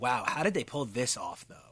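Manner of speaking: plain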